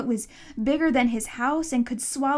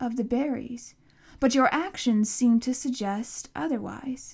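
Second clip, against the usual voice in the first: ordinary delivery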